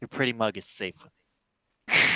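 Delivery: confiding stage whisper. Patting a character's chest plate in character, whispering in character. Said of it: "I'm gonna whisper".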